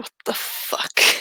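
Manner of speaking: shocked hushed whisper. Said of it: "Elliot is just kinda like".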